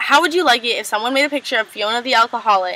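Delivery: plain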